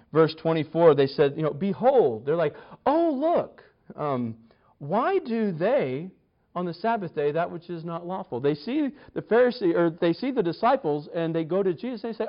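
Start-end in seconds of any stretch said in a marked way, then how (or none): 2.8-8.4 soft, smug, arrogant, self-satisfied superior tone. Acting out the Pharisees questioning Jesus, in a mock-smug tone. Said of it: "that smug tone in their voice".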